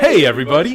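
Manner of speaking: relaxed, welcoming, friendly, casual tone. Showing how to open the Hardcore Casual Podcast, friendly greeting. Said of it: "You got to be friendly".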